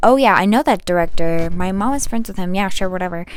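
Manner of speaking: ordinary talk, nothing marked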